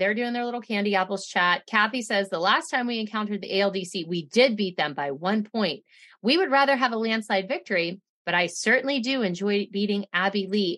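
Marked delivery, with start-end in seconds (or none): none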